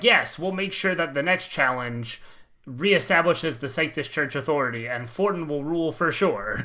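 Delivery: ordinary delivery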